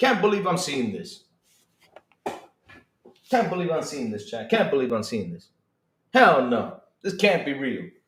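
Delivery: low, seething, disbelieving furious muttering. A streamer rants to chat about the PS5 in the trash: furious. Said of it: "I'm furious".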